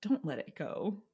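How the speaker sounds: alien voice in a whisper. Joking that an alien controls a celebrity's comments, the alien whispering. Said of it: "The alien whispers".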